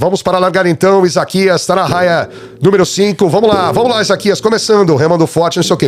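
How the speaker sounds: high-pitched sports announcer voice. Speaker mimics how a canoe race commentator talks, sports announcer voice. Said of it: "Porque você fala daquele jeito".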